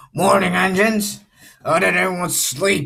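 loud, high-pitched, booming character voice. Voicing the railway director greeting the engines: Mister Davis character voice. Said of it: "I think I'm gonna be doing Mister Davis's voice".

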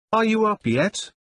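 insistent, high, demanding call. An aunt outside the door calls to her nephew; demanding. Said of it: "she demanded".

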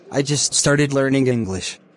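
ordinary talk, nothing marked

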